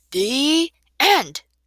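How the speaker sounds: loud, high bellowed delivery. Narrator reading the uncle's answer to the children's question, bellowing. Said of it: "took a deep breath and bellowed".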